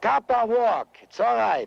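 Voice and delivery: put-on heavy Yiddish accent. Playing a Sioux chief who stops a wagon train: incredibly Yiddish accent. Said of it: "doing an incredibly Yiddish accent as the, the Sioux chief".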